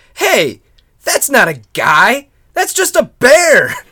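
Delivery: put-on shout. Retelling a tale where a dinner guest exposes the bear: imitating a shout. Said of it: "Shouts out loud".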